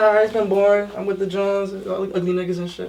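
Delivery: ordinary talk, nothing marked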